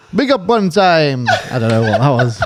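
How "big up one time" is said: high, drawn-out DJ-style call-out. Giving a quick celebratory shout-out: David Rodigan impression. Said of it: "That was like your best David Rodigan impression".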